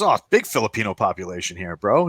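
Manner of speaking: ordinary talk, nothing marked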